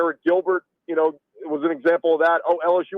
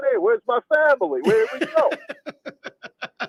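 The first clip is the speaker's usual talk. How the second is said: put-on Cajun accent, higher pitched; 7 semitones higher than usual. Joking that a week around the Cajuns rubbed off on him, Brian Kelly putting on a Cajun accent. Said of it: "hanging around with the Cajuns".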